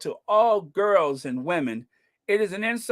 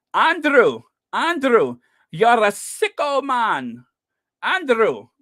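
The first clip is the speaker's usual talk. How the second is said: loud, very slow put-on Scottish accent, rolled r; 4 semitones higher, 5 dB louder than usual. Quoting a man in Scotland addressing Andrew, imitating a Scottish man's rolled R's. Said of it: "as the guy in Scotland says".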